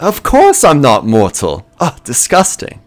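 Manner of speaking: giggling, laughing through words with swooping pitch. A player asks if she is mortal, and she answers; laughing while talking. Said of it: "She just kind of like laughs at that".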